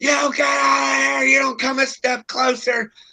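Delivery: put-on very high, shrieking, screaming old woman voice. Retelling how an old lady answered an offer of help: imitating her screaming. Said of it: "And she's screaming".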